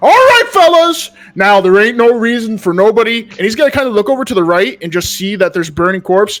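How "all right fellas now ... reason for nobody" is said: loud, swooping yell. A marshal with a drawn sword calls out to the fellas, yelling out. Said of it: "he's just going to yell out".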